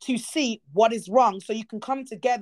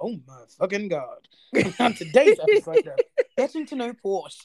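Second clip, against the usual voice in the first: loud announcer voice with swooping pitch; 4 dB louder than usual. Teasing the other speaker for sounding like an announcer, doing an announcer voice. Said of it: "you sounded like an announcer".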